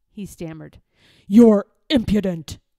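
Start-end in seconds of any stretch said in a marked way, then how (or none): 1.3-2.6 harsh, raised, scolding tone. A lord answers a young man's objection about the king's stilts; harsh. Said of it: "said Lord Droon harshly".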